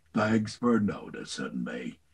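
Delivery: very low, deep voice, dropped right down. Recalling an audition for Eeyore, redoing the line: Eeyore voice. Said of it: "I felt really good about Eeyore".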